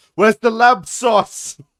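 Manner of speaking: shrill yell, TV chef style. Telling how you asked about your shepherd's pie at a restaurant, in a Gordon Ramsay accent. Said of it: "In a Gordon Ramsay accent".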